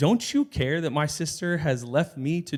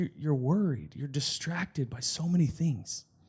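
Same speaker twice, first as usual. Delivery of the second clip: tender, soft, incredibly gentle voice; 5 dB quieter than usual. Retelling Jesus answering Martha: imitating a very gentle answer. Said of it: "answers her in a way that is incredibly gentle".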